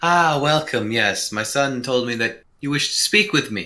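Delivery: refined, elegant, welcoming woman's voice. Voicing an elegantly dressed woman welcoming the players: voicing an elegantly dressed woman. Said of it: "this very elegantly dressed woman, she goes".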